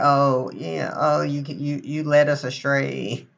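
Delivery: very slow, acted-out whiny complaining voice. Acting out people complaining when things go badly, in mock bitching and whining. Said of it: "that's my fucking bitching and whining voice".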